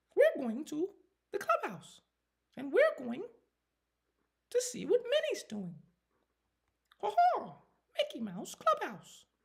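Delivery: very high-pitched, swooping cartoon voice. Doing the voice once done for a daughter, Mickey Mouse voice. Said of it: "I can do the Mickey Mouse hard".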